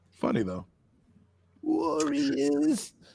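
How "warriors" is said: put-on very high, creaky, crackly old-lady voice.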